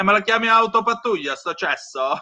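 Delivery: put-on indignant, fed-up, angry, high-pitched outburst. Retelling a film scene about a sidecar patrol: imitating angry Commissario Logatto. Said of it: "E se ne va tutto incazzato".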